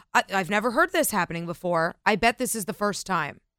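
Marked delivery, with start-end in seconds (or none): none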